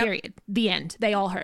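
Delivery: ordinary talk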